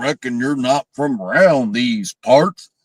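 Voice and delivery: exaggerated fake Southern accent. Retelling a movie character's line: imitating a fake Southern redneck accent. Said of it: "the worst fake Southern redneck accent".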